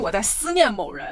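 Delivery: normal talking voice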